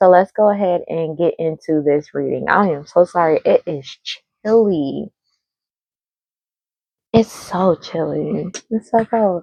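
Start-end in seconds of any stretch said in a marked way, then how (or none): 2.5-9.4 slow, unhurried, lingering, drawn-out delivery. Starting a reading for viewers on a cold day, in a low voice. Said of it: "I know my voice is low right now".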